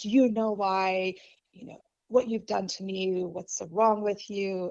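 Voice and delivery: imitated mean, nasty tone. Retelling how their mom started in on them, imitating a mean voice. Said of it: "she just started off just with this mean voice".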